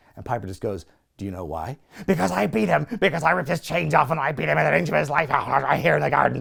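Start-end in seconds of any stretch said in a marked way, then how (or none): 1.2-6.4 put-on wild-man sudden ranting outburst. Retelling a talk-show host snapping into a wild-man outburst: imitating a wild-man outburst. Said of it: "he just snaps into, like, old Piper all of a sudden, a wild man".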